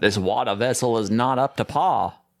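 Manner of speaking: poor Georgian accent. Joking about a board game boat, doing a bad Georgian accent. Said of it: "not the best Georgian accent I can do".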